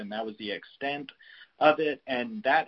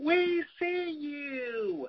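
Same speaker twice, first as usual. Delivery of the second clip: put-on very high shrill cry, long drawn "you". Retelling a woman on the crowd's fringes yelling at people going inside; imitating a shrill yell. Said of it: "yelling in this like really shrill voice".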